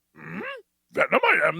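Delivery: put-on creature voice. Retelling an actor asked for a voice: Venom voice. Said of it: "give us a Venom voice".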